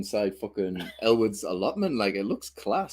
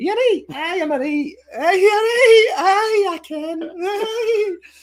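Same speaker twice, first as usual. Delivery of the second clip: very high, squeaky Scottish granny voice. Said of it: "I was like Missus Doubtfire".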